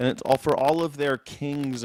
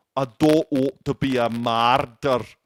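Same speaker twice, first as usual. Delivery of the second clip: loud, full-voiced put-on Scottish accent; 5 dB louder than usual. Focusing on the actor's accent and acting it out, Mel Gibson doing a Scottish accent. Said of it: "Mel Gibson doing the Scottish accent".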